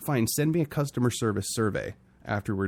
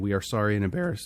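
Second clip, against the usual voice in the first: voice cracking. Host reading out a company's apology tweet, voice cracking. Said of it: "my voice is cracking like I'm going through puberty".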